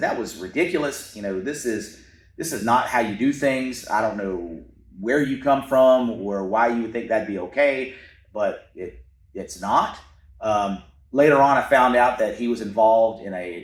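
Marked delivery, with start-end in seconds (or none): none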